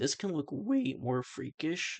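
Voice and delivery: voice cracking and breaking on the words. Speaker critiquing a design, voice cracking. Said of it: "voice crack".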